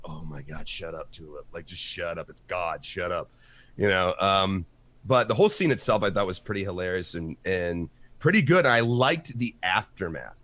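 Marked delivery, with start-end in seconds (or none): 0.1-3.3 soft, low, exasperated groaning plea. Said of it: "I was like".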